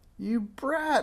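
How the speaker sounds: very high-pitched shrieking witch voice. Narrating a story, the witch Madame Snickersnee turns on Minx: shrieking witch voice. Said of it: "shrieked Madame Snickersnee".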